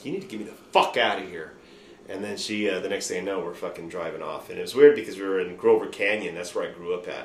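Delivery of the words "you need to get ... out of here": mock yelling. Telling a story about being upset and yelling at someone, retelling a yell. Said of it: "and I'm yelling at Sue".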